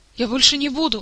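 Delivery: startled, high, frightened yelp. Caught out by his mentor, he protests; cried out in fright. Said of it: "испуганно вскрикнул Мафей".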